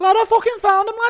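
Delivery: shrill, very loud, high, shrieking put-on voice. Doing an impression of Till finding diamond and falling in lava: Till impression. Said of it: "Impression of Till finding diamond".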